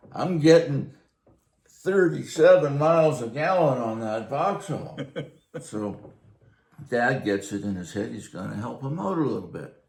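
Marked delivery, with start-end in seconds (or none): 0.2-5.0 very loud, big-voiced booming delivery. Recounting Ray coming over to talk to Dad, imitating Ray's booming voice. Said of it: "this guy had a big booming voice".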